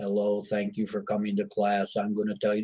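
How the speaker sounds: put-on boring flat teacher voice. Describing teachers from school, imitating a monotone teacher greeting the class. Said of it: "we've all had teachers that were monotone".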